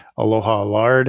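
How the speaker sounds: ordinary talk, nothing marked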